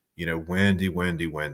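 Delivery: ordinary talk, nothing marked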